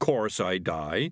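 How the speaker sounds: ordinary delivery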